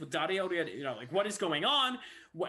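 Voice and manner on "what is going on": put-on screaming, higher, louder. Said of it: "they're yelling and screaming about something".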